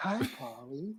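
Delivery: seductive female robot voice. Imitating the reprogrammed movie robot greeting polly: sexy woman robot voice. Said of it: "had this, like, sexy, like, woman voice".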